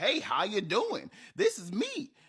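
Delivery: comic, high, sing-song southern drawl. Voicing a little fairy guy for kids in a dungeon story, funny southern accent. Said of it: "with a funny southern accent".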